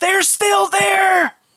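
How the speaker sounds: very high-pitched shrieking scream. Narrator voicing one of the villagers as a door opens, screaming. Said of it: "one of the villagers screams".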